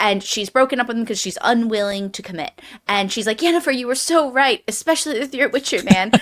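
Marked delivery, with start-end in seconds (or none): 3.4-6.1 mock bitter tone, higher. Retelling what a spurned character says to yennefer: imitating a bitter character. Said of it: "super bitter about it".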